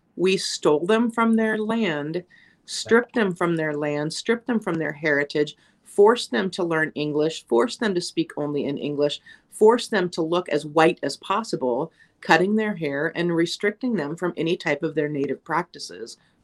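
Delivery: ordinary delivery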